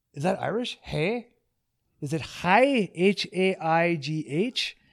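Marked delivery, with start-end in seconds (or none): 0.8-2.9 put-on Scotsman accent, higher pitch. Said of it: "And I said it like a Scotsman".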